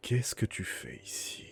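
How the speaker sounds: hollow, cave-like voice. Telling a player what they will hear behind them, in a cavernous voice. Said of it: "Tu vas entendre une voix caverneuse".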